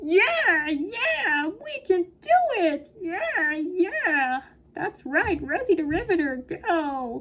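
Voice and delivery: high, swooping cartoon cheer, "go" dragged out. Narrator of a history lesson cheering on a wartime poster: Lightning McQueen voice. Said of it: "Sorry about my Lightning McQueen voice".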